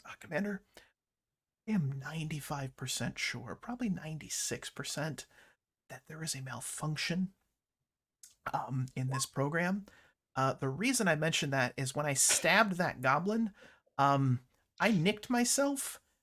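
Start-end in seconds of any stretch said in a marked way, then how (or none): 0.1-9.9 soft, hushed, leaning-in stage half-whisper. Voicing a commander who leans in to tell another commander: half-whispering in character. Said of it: "he's going to lean in and whisper".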